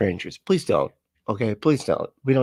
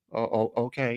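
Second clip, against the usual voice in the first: put-on acted awkward teenage boy voice, quieter; 6 dB quieter than usual. Acting out the teenage son being sent away: acting out an awkward teenage son. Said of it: "Very, like, awkward".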